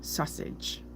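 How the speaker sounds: the word sausage whispered very softly. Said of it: "it's a hard word".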